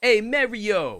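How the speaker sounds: New York accent, loud. Disputing how people in new york say mario, doing a new york accent. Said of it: "That's how people say Mario in New York".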